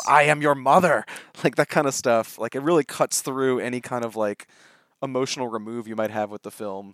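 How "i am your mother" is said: raw, loud, barn-burner angry outburst. Retelling a raw scene where a mother slams the table: imitating Toni Collette's angry outburst. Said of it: "slams on the table, says".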